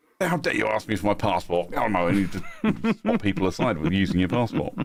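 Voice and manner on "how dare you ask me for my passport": put-on indignant tone with British accent. Telling a travel story, acting out an imperial-era British traveler, mock-indignant. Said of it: "like back in the days of the Empire".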